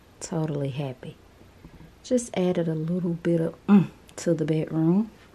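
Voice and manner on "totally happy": soft unvoiced whisper.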